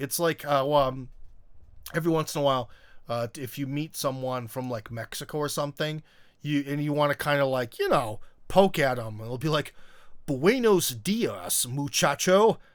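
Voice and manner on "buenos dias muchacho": put-on Spanish words in an over-the-top American accent. Showing how someone teases a person from mexico, spanish in most american way. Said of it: "saying like something they like the most American way possible".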